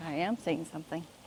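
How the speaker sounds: very soft, hushed, barely audible voice. Answering a request to say something on mic: talking very softly. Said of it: "She's talking very softly".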